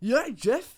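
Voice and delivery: put-on full Geordie accent, very high and loud. Describing two mates who play every Monday, Geordie accent impression. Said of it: "a really like through and through Geordie".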